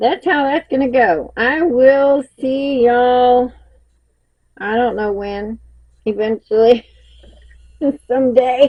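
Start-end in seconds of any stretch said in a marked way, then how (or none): 1.4-8.7 slow, giggling, laughing through the words. Signing off and saying goodbye for now, laughing while talking. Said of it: "I'm cracking myself up here".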